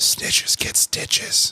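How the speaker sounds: breathy, hushed whisper, close and quiet. Retelling what a five-year-old kid whispered in his ear: retelling a kid's whisper. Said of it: "He comes up to my ear and he whispers".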